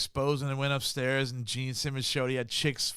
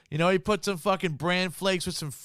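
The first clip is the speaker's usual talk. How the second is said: ordinary delivery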